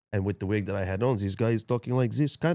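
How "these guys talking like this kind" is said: fake, put-on Russian character accent. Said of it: "that's Russian".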